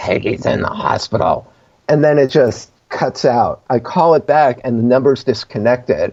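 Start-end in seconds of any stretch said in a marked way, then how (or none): 0.0-1.5 strange, weird, breathy whisper. Retelling a phone call from a deceased man's number: imitating a weird voice. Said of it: "this weird voice going like".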